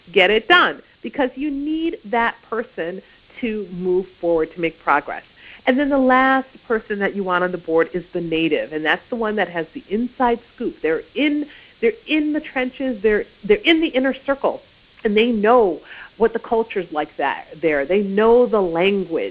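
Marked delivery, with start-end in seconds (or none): 0.2-0.8 loud, barked drill sergeant voice. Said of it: "you want that drill sergeant".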